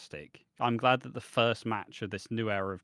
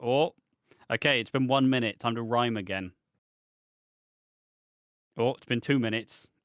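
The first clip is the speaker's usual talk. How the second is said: usual speaking voice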